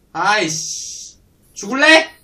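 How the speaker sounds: very loud, high, drawn-out, petty furious outburst.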